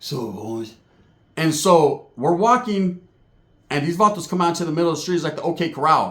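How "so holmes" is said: crazy big dude's manner of speaking. Retelling what a big older friend said before a street fight: imitating Charlie boy's way of talking. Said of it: "That's how he talks, too".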